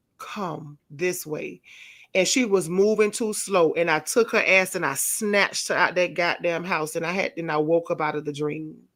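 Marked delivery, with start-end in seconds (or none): 0.2-1.6 soft, hushed half-whisper. Retelling a dream of rescuing a daughter: imitating a half-whisper. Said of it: "I whispered to her".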